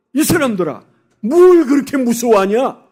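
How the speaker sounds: acted scolding tone. Voicing Jesus rebuking his frightened disciples, retelling a rebuke with feeling. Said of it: "좀 감정을 넣어서 한번 생각해 보세요".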